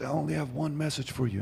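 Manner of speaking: high preacher delivery in big-crowd style. Retelling a stadium event, imitating how the preacher spoke: Billy Graham impression. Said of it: "He says".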